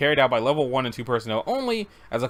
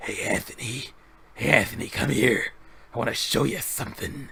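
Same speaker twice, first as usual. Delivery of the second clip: put-on monster voice; 3 dB quieter than usual. Acting out a creature calling a staff member over: Venom voice. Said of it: "I just made him sound like Venom".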